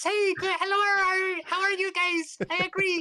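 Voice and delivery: very high, loud pirate captain voice, "hello" drawn out. Podcast host introduces himself as a pirate captain, pirate captain voice. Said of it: "pirate captain that talks like this".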